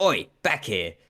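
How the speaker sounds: sharp, barked delivery. Spotting someone stepping out of line, barking an order at them. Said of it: "I'm going to just bark like".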